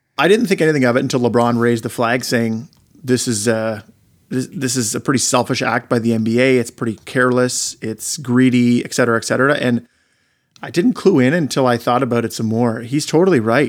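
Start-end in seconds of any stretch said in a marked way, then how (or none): none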